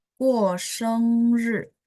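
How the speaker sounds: slow, high, drawn-out, careful reading.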